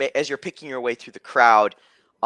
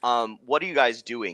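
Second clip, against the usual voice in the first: ordinary talk, nothing marked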